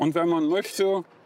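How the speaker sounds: ordinary talk, nothing marked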